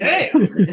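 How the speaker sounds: high, laughing, mock tone. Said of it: "You're just like".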